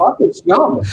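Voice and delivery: put-on man's voice with a German accent. Retelling a man's comeback in a conversation, in his german accent. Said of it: "he comes back in his German accent".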